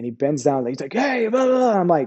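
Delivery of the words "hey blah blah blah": shrill, high-pitched, rowdy, dumb-sounding hollering. Retelling how a man on the ground yelled up: imitating someone yelling. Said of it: "he was just yelling and being stupid".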